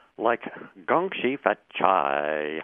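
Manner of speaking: Mandarin with California accent. Speaker demonstrates how they speak Mandarin, with a California accent. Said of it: "Mandarin with a California accent".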